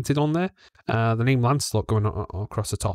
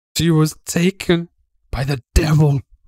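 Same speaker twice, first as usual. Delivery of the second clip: put-on crying old woman voice, louder; 5 semitones higher, 7 dB louder than usual. An elderly woman rocking in her chair answers where her daughter went, crying. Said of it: "You see a fairly elderly lady who's just rocking in the chair. She's cradling what seems to be some sort of stuffed doll and just rocking backwards and forwards and just crying to herself".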